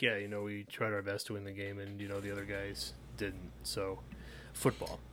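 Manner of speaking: very quiet, hushed, very soft, barely audible. Naming a favorite coach soundbite, imitating Bill Belichick. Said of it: "anytime Bill Belichick speaks".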